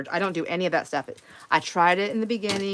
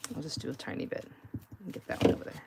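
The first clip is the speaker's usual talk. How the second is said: mumbled under breath, much quieter; 3 semitones lower, 9 dB quieter than usual. Tearing up paper for a project, the speaker is mumbling. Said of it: "mumbling, sorry".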